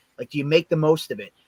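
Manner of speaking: ordinary talk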